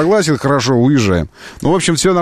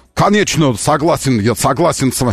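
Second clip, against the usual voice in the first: put-on Georgian-accented speech; 2 semitones lower than usual. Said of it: "У тебя какой-то грузинский получился".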